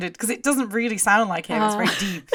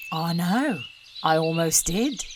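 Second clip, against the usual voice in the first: grandfather character voice, read from a script; 2 semitones lower, 6 dB quieter than usual. Reading a deleted scene aloud, voicing Grandad. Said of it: "I'll try and do Grandad".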